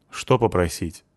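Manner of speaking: plain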